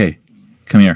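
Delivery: secretive, confiding tone. A player's character nudges Jack to call him over, conspiratorial. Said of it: "very conspiratorially be like".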